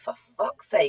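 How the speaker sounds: put-on speaking through gritted teeth. Recalling turning the bike around after mum's warning, retelling own gritted-teeth remark. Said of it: "through gritted teeth".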